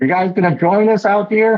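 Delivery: shouting. Playing a character at a hatch, calling to the other players, yelling. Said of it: "I'm just yelling".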